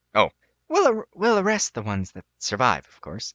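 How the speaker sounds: sheepish, abashed, stumbling delivery. After the Duke gives her a look, the knight adds her remark; sheepish. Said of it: "The knight smiles rather viciously. / she adds sheepishly. / The knight smiles rather viciously".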